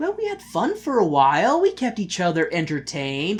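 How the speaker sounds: patronizing, talking-down, high sing-song tone. Retelling the ending, quoting the character Ryuk: imitating condescending Ryuk. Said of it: "the way that Ryuk is just so condescending".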